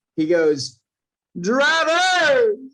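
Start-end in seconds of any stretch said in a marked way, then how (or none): 1.3-2.5 high, loud announcer voice, word stretched out. Doing a remembered announcement impression: Matthew McConaughey announcer impression. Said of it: "the Matthew McConaughey impression of him at coda".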